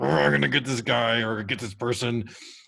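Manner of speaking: mock angry voice. Describing reading someone's Facebook post, acting out their past self; mock-angry. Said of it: "I'm angry".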